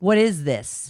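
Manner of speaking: mock disdainful tone. Acting out how a charge gets questioned: imitating a disdainful tone. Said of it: "With d-, disdain".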